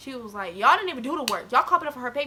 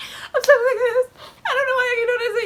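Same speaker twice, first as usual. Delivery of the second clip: very high, loud, upset and tearful crying; 12 semitones higher, 7 dB louder than usual. Retelling being fed up with people bothering the speaker, imitating own crying. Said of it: "And I start crying like".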